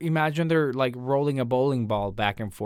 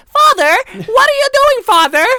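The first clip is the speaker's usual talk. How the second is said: mock dubbed child voice, higher and louder; 14 dB louder than usual. Mocking the english dub of a film's children: imitating an adult faking a kid voice. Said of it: "a fifty-year-old woman trying to sound like a kid".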